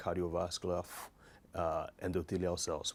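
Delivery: normal talking voice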